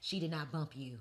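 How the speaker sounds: firm, no-nonsense, stern voice. Retelling what she told her friend, in a put-on stern therapist voice. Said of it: "I had a real stern therapist voice".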